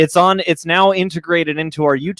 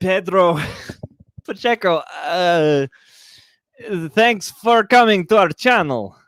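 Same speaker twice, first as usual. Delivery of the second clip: half-guessed, attempted put-on Portuguese accent; 4 semitones higher than usual. Asked to shout out a viewer in his best portuguese voice, attempting a portuguese accent. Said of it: "in your best Portuguese voice".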